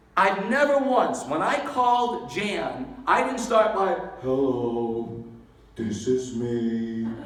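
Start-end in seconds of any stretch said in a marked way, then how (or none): 4.2-7.0 downbeat, gloomy, very deep, slow and drawn out. Showing how not to open a phone call: gloomy Eeyore voice. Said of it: "Nobody wants to be signed up by Eeyore".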